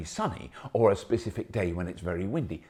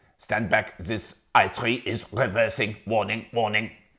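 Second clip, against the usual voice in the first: very bad, over-the-top, fake German accent; 4 dB louder than usual. Imitating a car's reversing warning, in a bad german accent. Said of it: "That's a very bad German accent".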